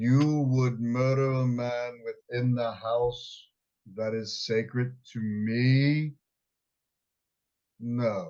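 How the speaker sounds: deep, slow voice, stretching out "me". A player voices his character during the game; loud deep booming voice. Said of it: "the loudest deep booming voice he can get".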